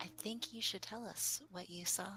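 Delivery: secretive, quiet whisper, very close up. A character leans in close and speaks into Brom's ear: whispering in someone's ear. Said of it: "he whispers into Brom's ear".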